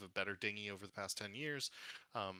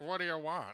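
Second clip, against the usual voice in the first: high, loud, lisping whistle through gappy teeth; 7 semitones higher, 5 dB louder than usual. Doing a character voice for a rough man with two teeth, asking a visitor what he wants, with a whistle between the teeth. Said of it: "quite a whistle between the teeth".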